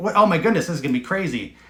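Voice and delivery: ordinary talk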